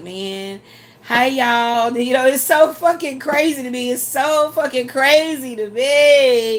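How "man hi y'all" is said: mock timid, sheepish, cowed tone. Imitating other channels greeting viewers: imitating a sheepish greeting. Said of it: "tail between their legs".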